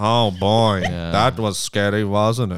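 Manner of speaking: put-on dragging, very slow hungover voice. Imitating R L Stine closing the episode: hungover R L Stine voice. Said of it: "he's hungover".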